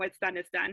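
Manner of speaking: usual speaking voice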